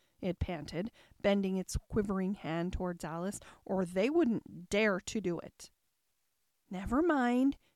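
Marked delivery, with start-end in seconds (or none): 6.7-7.5 soft, soothing, calming tone. Alice calms a speaker who is trembling with excitement, in a soothing tone. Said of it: "said Alice in a soothing tone".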